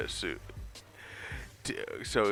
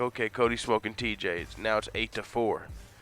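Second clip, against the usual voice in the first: ordinary delivery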